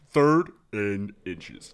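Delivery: loud, put-on football sports-announcer calling voice. Asked for a sports voice, calling a play in Madden announcer voice. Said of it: "can you do the Madden voice guy? Can you make it sound like that?".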